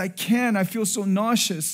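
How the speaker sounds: mock weepy, slow, tearful words through crying. Retelling his wife's tearful answer that she can't eat: imitating someone crying. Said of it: "And she's crying".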